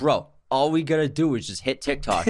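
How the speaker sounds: normal talking voice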